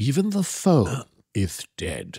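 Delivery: very slow, drawn-out, lisping, swooping sing-song baritone. Describing Karloff's voice to the others, doing a Karloff lisp impression. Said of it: "he had a little bit of a weird lisp".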